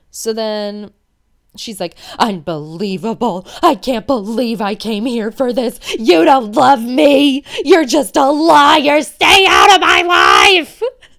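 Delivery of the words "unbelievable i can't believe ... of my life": loud, all-out screaming fit. Retelling a TV scene where a woman screams at a man: retelling her screaming. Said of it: "her screaming at him in that tone".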